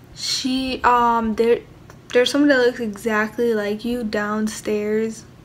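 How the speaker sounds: ordinary delivery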